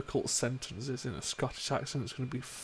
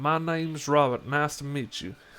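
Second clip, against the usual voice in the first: cliché southern American accent; 6 dB louder than usual. Showing an accent while talking about holding accents, stereotypical southern US accent. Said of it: "like stereotypical, like southern U S A".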